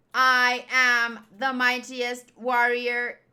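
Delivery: loud, flat, stiff mechanical robot voice. Voicing a line from the show, talking like a robot. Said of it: "Why am I talking like a robot?".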